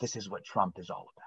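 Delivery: hushed, quiet, breathy whisper. Retelling a book scene where a man whispers to his lawyer: imitating a whisper. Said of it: "and whispers".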